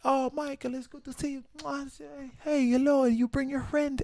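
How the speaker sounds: terrible fake Italian accent. Quoting a guy who greeted him after the show, in a terrible italian accent. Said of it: "That's a terrible Italian accent".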